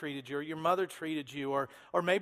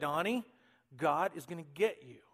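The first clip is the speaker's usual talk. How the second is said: put-on stern old woman voice; 2 semitones lower, 3 dB quieter than usual. Retelling how a grandmother kept a boy in line: imitating a mean grandma warning. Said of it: "she would say it with that mean grandma look".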